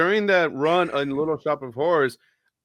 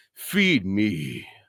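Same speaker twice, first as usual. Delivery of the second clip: very low, deep, dropped put-on voice; 7 semitones lower than usual. Speaker shows a voice they can still do years later: put-on character voice. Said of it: "I could still that voice".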